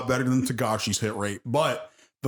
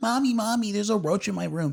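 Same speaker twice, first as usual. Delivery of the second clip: put-on high little girl voice; 8 semitones higher than usual. Retelling a movie scene where a roach frightens her: imitating a little girl. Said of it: "a little girl comes into the room ... She's like".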